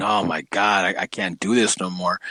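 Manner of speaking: put-on frustrated voice. Voicing the frustration heard in the listener's voice, imitating a frustrated voice. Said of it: "I can just hear the frustration in your voice".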